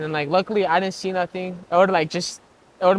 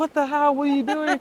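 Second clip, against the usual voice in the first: put-on crying speech, higher; 8 semitones higher than usual. Retelling his mother's reaction when he came home bloody: imitating mom crying. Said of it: "she started, like, crying".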